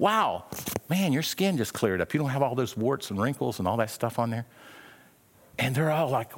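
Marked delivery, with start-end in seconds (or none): none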